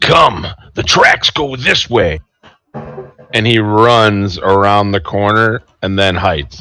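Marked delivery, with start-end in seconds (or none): 0.0-2.2 high-pitched, shouting monster voice. Game master voicing the owlbear in a tabletop game: owlbear yelling out. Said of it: "The owl bear yells out".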